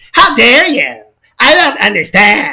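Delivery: slow, feminine-sounding put-on voice. Coaching someone to work on their voice, demonstrating a female-ish put-on voice. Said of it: "Can you sound like this?".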